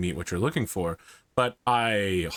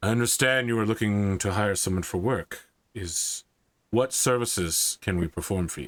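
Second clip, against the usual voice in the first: burly, heavyset, strong-sounding voice. Voicing a heavyset stranger who approaches you, in a deep voice. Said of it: "a deep voice just says".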